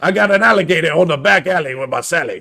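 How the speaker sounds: loud, high-pitched Cajun accent. Speaker redoing the accent a co-host teased him about: Bobby Boucher voice. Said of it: "morphed from like Massey into hey Baba".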